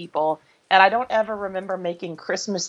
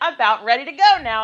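play-acted, raised, louder and higher voice; 6 semitones higher than usual. Retelling speaking up again as a child in church, louder voice. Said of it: "and stayed again in a louder voice".

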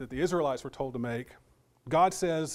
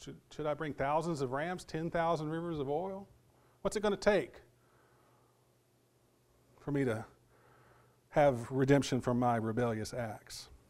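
sarcastic, mocking tone with rhetorical questioning intonation; 3 dB quieter than usual. Rereading rhetorical questions from scripture aloud: imitating a sarcastic tone. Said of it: "you hear the sarcastic tone in that".

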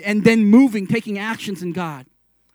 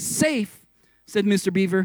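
ordinary delivery, nothing marked

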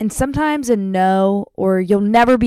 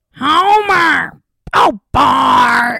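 raspy, pitched-up voice, "bar" drawn out long; 5 semitones higher, 4 dB louder than usual. After saying you sounded like a cartoon character, demonstrate with a raspy Marge Simpson voice. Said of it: "I sounded like Marge Simpson".

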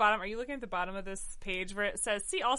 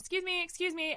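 mock courteous but insistent tone, raised pitch; 9 semitones higher than usual. Retelling squeezing back to a theater seat: imitating polite assertive request. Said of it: "I said it, like, politely, assertively several times".

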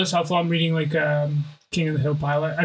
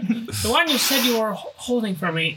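put-on, pitched-up voice from corner of mouth; 5 semitones higher than usual. Doing an impression of the woman in a movie: side-of-mouth impression. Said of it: "I'm trying to do an impression of the woman in that movie. Side mouth".

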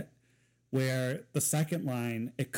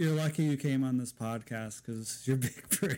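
giggling, barely holding it together, laughing. Joking to a podcast guest about their big break: laughing while talking. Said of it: "I couldn't say that without laughing".

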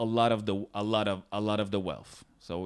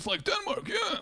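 put-on old man voice in a higher pitch; 4 dB quieter than usual. Retelling what a candidate said while running: Bernie Sanders impression. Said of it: "I'm basically imitating Larry David, imitating, imitating Sanders".

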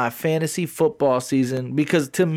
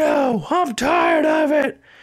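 acted, fed-up, very high, slow, angry voice; 13 semitones higher than usual. Retelling Corey's harassing messages in a group chat: imitating Corey's angry rant. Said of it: "He's like".

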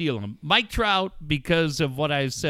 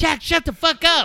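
very high-pitched, shrill, raised yelling; 13 semitones higher, 6 dB louder than usual. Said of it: "you're yelling at us".

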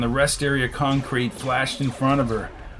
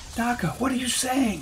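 very high, stunned, astounded half-whisper; 10 semitones higher, 4 dB quieter than usual. Narrator voicing the astounded Delphine reacting to Daka's offer, astounded half-whisper. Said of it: "whispered the astounded Delphine".

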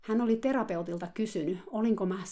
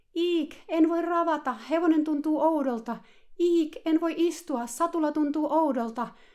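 very high, overblown, exaggerated shriek; 9 semitones higher, 6 dB louder than usual. The great coach mounts the student's horse to show her riding: shrill mocking Etsii Rohkeutta imitation. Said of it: "kilju kimeällä äänellä. Matkien dramaattisesti liiotellen".

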